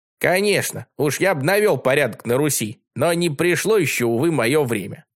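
ordinary delivery

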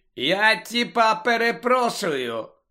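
derisive, mocking, high-pitched cutting tone. Narrator reads Malfoy cutting Hagrid off, mockingly interrupting. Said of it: "глузливо урвав його Мелфой".

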